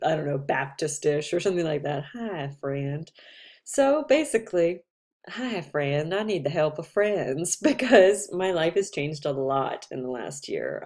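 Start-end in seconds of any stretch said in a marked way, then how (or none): 2.1-3.1 put-on folksy Southern accent. Speaker demonstrates a greeting meant as a play on the South; put-on Southern greeting voice. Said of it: "kind of something Southern and like".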